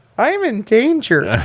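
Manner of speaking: put-on very high-pitched little-kid voice. Quoting a cartoon kid's line after comparing the film: Ralph Wiggum voice. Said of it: "That's fucking Ralph Wiggum talking right now".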